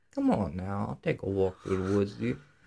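heavy, creepy Southern twang laid on thick. Describing the Walking Dead villain to the other speaker, do an Alpha southern twang impression. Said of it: "she's like got that southern twang and she's like".

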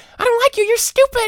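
tiny high-pitched voice. Speaker acting out a clay figure they created talking back; little high-pitched voice. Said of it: "and the person's like".

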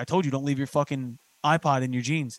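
normal talking voice

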